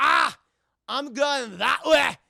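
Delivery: loud, slow put-on Scottish accent, Scotsman voice. Retelling a meeting on a bridge, voicing the Scotsman: Scotsman voice. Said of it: "this Scotsman".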